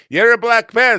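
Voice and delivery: very high, very loud, shrill Yiddish accent. Delivering a joke's punchline as the other speaker explains it: Yiddish accent. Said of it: "with the Yiddish accent".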